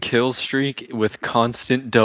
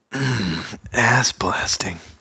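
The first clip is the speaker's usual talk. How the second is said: sultry, seductive, sensual delivery. Speaker demonstrating the line he just suggested saying, sensual voice. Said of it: "Look at him with a sensual voice and just say ass blasting".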